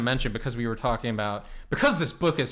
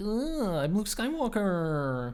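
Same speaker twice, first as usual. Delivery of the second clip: put-on whiny voice; 7 semitones higher, 5 dB quieter than usual. Speaker mocks how Luke comes across in the story: mock-whiny Luke Skywalker voice. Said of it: "he comes across as very whiny and like".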